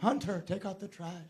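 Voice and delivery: cute, sweet put-on mom voice.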